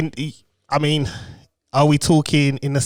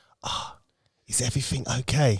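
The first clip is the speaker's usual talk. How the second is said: put-on whisper, quieter; 3 semitones lower, 9 dB quieter than usual. Retelling what the midwife asked the wife: imitating a whisper. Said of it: "she whispered to my wife".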